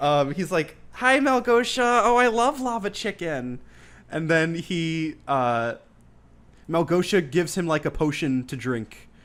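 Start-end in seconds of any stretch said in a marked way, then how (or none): 0.9-3.6 flamboyant high-pitched character voice. Retelling a movie scene, imitating General Chungus: flamboyant voice. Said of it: "he's very flamboyant".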